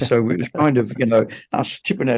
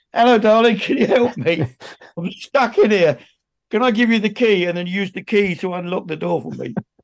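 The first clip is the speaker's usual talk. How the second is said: acted-out, raised, high-pitched friendly shout; 8 semitones higher than usual. Retelling calling to a passing lady from a locked car: imitating own shout. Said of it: "I shouted to her".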